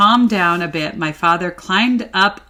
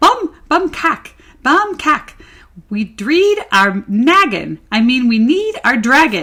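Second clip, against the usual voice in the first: tiny, high, excited screaming little voice; 5 semitones higher, 3 dB louder than usual. Reading a story aloud, voicing a tiny, excited scream. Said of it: "they heard a tiny, excited voice scream".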